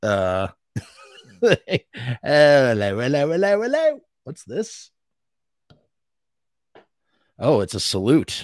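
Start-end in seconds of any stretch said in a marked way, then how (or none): 1.4-4.0 put-on poor English accent, pitched up.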